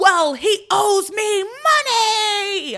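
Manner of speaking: booming, very high, very slow, drawn-out speech. Retelling Julian talking loudly to tip off Martin: imitating someone talking loudly. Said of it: "starts to talk really, really loudly".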